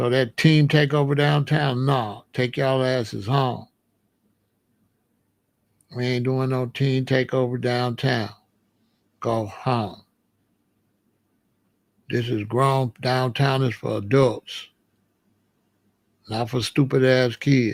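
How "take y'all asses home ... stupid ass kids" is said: stern, laying-down-the-law tone. Pretending to be the mayor, telling kids downtown to go home: pretend mayor addressing kids. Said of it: "I talk just like that as the mayor".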